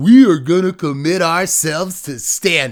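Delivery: very loud, booming announcer-guy voice. Quoting what they announced, the speaker switches to an announcer guy voice. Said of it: "like announcer guy voice".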